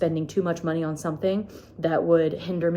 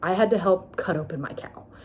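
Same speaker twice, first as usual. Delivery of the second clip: raw, emotional voice full of feeling. Speaker recalls the necropsy on their cow, getting emotional. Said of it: "I'm sorry for getting emotional".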